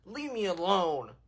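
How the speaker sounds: deliberately mean, low, quiet tone. On a live stream, the streamer now asks to be left alone: asking meanly. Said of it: "Do you want me to ask meanly?".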